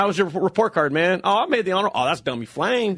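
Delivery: plain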